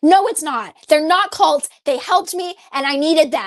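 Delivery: loud, tearful, angry screaming while crying. Recalling being told the programs they attended were cults, re-enacting a crying angry outburst. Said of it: "I started crying and like screaming at them".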